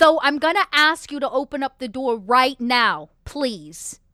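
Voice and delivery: firm, polite, commanding motherly voice. Voicing a character ordering someone through a door: mom voice. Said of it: "I'm just momming him through the door".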